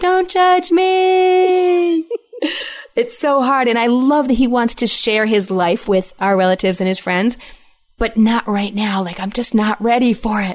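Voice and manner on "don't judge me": high, slow, drawn-out background scream. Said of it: "I'm just screaming in the background".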